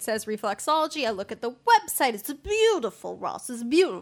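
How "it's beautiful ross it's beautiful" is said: put-on Italian gangster accent with swooping pitch. Telling Ross about a website he looked at, in an Italian mafioso accent. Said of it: "Is that an Italian mafiosa accent?".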